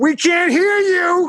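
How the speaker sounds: mock yelling voice. Retelling a heckler in the audience, imitating a heckler yelling. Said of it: "classic pieces of garbage just yelling".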